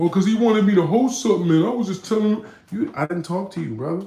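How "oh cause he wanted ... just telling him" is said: mocking, raised, high-pitched voice. Retelling how someone tried to explain it away: imitating someone making excuses. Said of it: "trying to make an excuse like".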